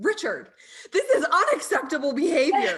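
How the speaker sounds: imitated yelling. Retelling scolding the chickens over their mess: imitating own yelling. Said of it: "yelling at".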